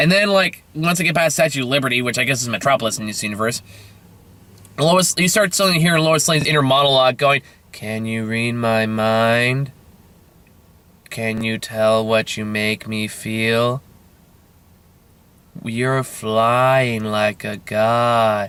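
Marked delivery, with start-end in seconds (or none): 7.7-18.5 put-on bored monotone voice, lower. Quoting a film character's inner monologue: imitating Lois Lane's monotone voice. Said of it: "such a monotone voice".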